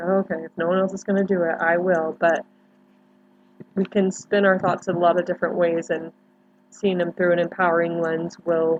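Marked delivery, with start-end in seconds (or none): none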